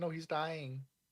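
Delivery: put-on high, childlike little-kid voice. Imagining the little goblins finding him: imitating nieces. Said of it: "They'll be like".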